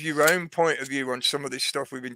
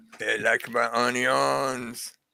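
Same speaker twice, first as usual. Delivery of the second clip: put-on French accent; 2 semitones lower than usual. Answering a comment asking for things said in a French accent: mock French accent. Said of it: "give it to me with a French accent".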